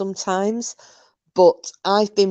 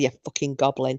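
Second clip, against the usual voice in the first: put-on Scottish accent, lower and quieter; 4 semitones lower, 4 dB quieter than usual. Repeating a favourite insult of their dad, scottish accent. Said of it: "it's funnier in a Scottish accent as well".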